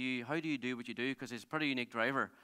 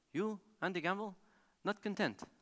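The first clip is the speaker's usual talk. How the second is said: light put-on French accent, pitched up; 6 semitones higher than usual. Retelling what a nine-time world rally champion told him, in a wee French accent. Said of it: "in his wee French accent".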